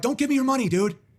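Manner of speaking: mock angry, high-pitched yell. Retelling replying to a homeless viewer's donation: retelling own yelling. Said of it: "I started yelling at him".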